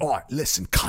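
word landed with heavy weight. Showing how a line sounds when Karl Urban says it: Karl Urban impression. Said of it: "Carl Urban".

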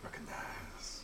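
soft, unvoiced whispered echo.

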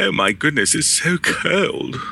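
very slow, drawn-out, high put-on posh accent. Joking that English people complain about weather in style: put-on posh accent. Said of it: "with a posh accent".

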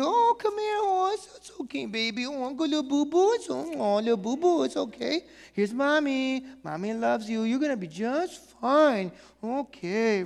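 tender, high, soothing, comforting motherly voice. Acting out how moms soothe a hurt child: imitating a comforting mom. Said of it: "She is moved to compassion for her children".

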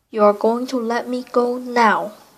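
rough, coarse, demanding tone allowing no refusal. A man speaks to a frightened woman before fleeing into the night; coarse demanding voice. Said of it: "he demanded in a coarse voice".

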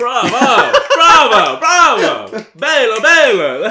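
laughing, high, loud cheering.

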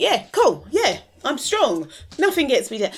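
high, loud, breezy mock bravado, unbothered.

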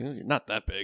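soft mumble under the breath. Voicing a character climbing out of a hole, mumbled under breath. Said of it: "I would mumble under my breath".

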